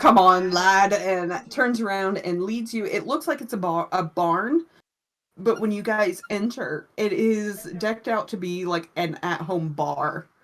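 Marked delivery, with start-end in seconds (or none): 0.0-0.9 put-on very loud, jolly old man, hearty jovial bellow. Voicing a jovial older bartender leading the party: jovial hearty old man. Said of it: "Man laughs, very, like, jovial, l-, hearty laugh".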